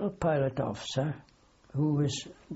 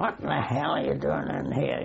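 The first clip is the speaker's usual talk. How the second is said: put-on proper, authentic Glaswegian accent. Retelling an interruption, the speaker quotes Jimmy in his Glaswegian accent. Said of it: "in his real Glaswegian accent".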